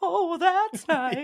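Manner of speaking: very high, grandmotherly voice. Repeating a remark as an impersonation of the speaker's grandmother: imitating a grandmother. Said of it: "more of a my grandmother impersonation".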